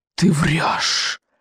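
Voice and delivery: dragon voice, hissed. Reading a story, a character accuses the boy of lying: hissed accusation. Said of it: "прошипел он".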